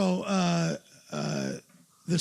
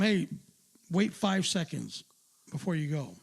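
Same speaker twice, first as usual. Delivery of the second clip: plain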